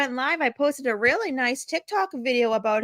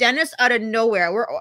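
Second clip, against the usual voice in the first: usual speaking voice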